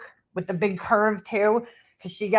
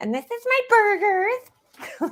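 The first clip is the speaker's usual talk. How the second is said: weird, very high, slow, rising put-on voice; 12 semitones higher than usual. Mocking a woman showing things on camera, imitating a weird high-pitched voice. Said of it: "that fucking weird high-pitched voice".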